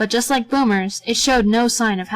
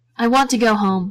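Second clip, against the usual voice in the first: plain reading voice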